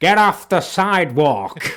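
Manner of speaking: acted, very loud, shrill, irate New York bellow. Joking about stereotypes of New Yorkers, imitating an angry New Yorker. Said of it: "That's what they say".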